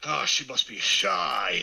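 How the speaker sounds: rough, creaky, slow character voice, drawn out. Voicing a shy girl's mother in a funny voice: Columbo voice. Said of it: "You sound like Columbo".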